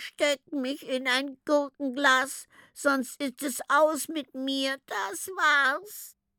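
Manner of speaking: high drawn-out groaning. The Glubsch, crouching on a crate in the treehouse, groans: groaning. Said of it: "stöhnte".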